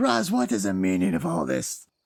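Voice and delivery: animated character voice, high and widely swooping. Voicing Galoom marching in and picking people up: voicing Galoom. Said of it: "and he's like".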